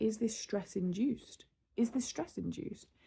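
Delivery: ordinary delivery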